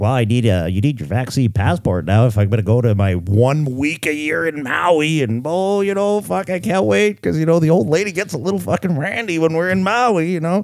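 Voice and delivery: scornful, derisive mock vacationing-tourist voice. Mocking people who want vaccine passports for a maui trip: impersonating vaccinated tourists. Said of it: "I kinda like that impersonation".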